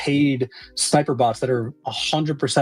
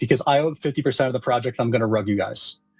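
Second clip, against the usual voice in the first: usual speaking voice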